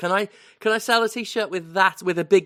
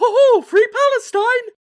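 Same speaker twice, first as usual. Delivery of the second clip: very high, loud, slow cartoon mouse voice; 9 dB louder than usual. Discussing whether they would get sued for it, doing the Mickey voice. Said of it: "if you tried to do the Mickey voice?".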